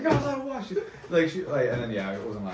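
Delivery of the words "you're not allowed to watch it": play-acted, very high, shrill, scolding yell. Retelling the mother catching a child watching a cartoon: imitating mom yelling. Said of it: "How do you yell at a four-year-old like that".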